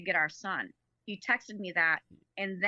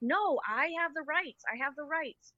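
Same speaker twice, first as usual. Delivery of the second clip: frantic, high, panicked, flipping-out outburst; 8 semitones higher than usual. Retelling facing a police officer at the door: imitating own panicked protest. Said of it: "I'm flipping as they're standing there".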